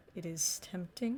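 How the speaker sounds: very quiet, hushed, low under-the-breath murmur. A narrator voices Lucio, who looks at the player: speaking very quietly. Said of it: "he says very quietly".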